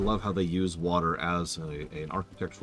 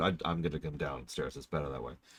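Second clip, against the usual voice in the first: mock grave, dead-serious delivery; 2 semitones lower, 6 dB quieter than usual. Retelling what the other speaker said on the phone: imitating a deadly serious tone. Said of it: "in such a deadly serious tone".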